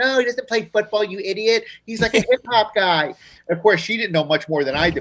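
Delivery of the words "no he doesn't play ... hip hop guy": pitched-up stock woman voice. Retelling a phone call, the speaker voices his girlfriend's reply: imitating Denise. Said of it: "that is the voice that [name] will do for any woman".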